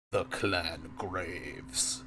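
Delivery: low, rough, gravelly monster voice. Narrator voicing a creature as it turns toward Nathan: gravelly creature voice. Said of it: "in a gravelly voice it says".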